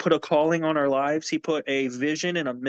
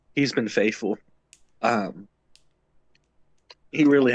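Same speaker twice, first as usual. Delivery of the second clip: voice fighting off tears, near crying; 5 semitones lower than usual. Asked what stands out to them most, the speaker answers, holding back tears. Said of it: "I'm trying not to cry".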